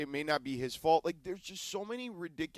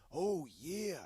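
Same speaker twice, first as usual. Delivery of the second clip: lighter, less gravelly wrestler voice; 2 semitones higher, 5 dB quieter than usual. Showing how to do the Randy Savage voice without straining: Randy Savage impression. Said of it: "gotta go different on the Randy Savage".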